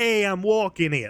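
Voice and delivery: put-on New York accent. After a boston attempt, showing what a real new york accent sounds like. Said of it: "that's a New York accent".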